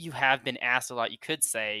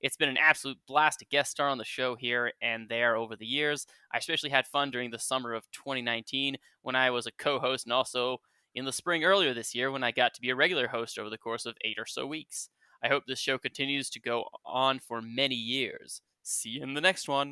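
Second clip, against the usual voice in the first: plain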